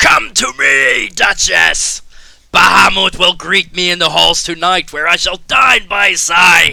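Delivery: loud, high, muffled, ringing shout. Narrator voicing a man shouting to the duchess from behind the fallen stone. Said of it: "you hear him shouting".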